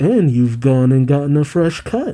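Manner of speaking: ordinary talk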